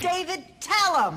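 mock yelling. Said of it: "She's yelling".

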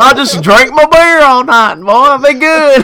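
put-on very loud, high good-ol'-boy holler. Mocking people's comments about drinking beer to skip masks, speak in a Bubba J voice. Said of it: "Why do you sound like Bubba J".

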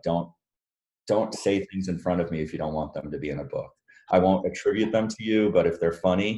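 plain

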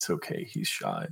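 very low, hushed, murmured half-whisper. A character leans over the counter toward the guy, half-whispering. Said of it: "lean over the counter at the guy and just whisper".

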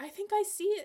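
very high shout. Narrator reads Sloane shouting, unsure anyone can hear, shouting. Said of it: "she shouted".

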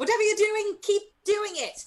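very high, yelled calling-out voice. Voicing a character mid-fight calling to an ally: yelling in character. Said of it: "Corey's gonna yell over her shoulder".

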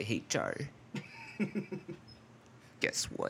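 half-whispered, hushed, breathy way of talking. Retelling how a neighbor named Joe greeted the speaker, imitating Joe's way of talking. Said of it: "he always talked like this".

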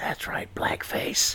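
hushed whisper. Discussing old songs with links to blackface, saying the word in a whisper. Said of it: "I'm whispering blackface".

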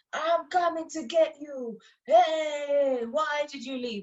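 slow action-movie villain cry, "hey" drawn out. Retelling the Exodus chase, voicing Pharaoh: imitating Pharaoh screaming.

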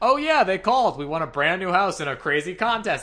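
mock, very sarcastic tone. Retelling how he answered when asked about the call, imitating a very sarcastic tone. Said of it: "he does it in a very sarcastic tone".

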